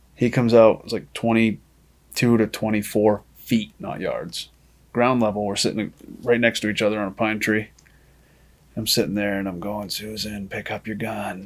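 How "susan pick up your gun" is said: slow, hushed half-whisper. Speaker retells half-whispering to a companion sitting beside them, retelling a half-whisper. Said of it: "I'm whispering in her ear".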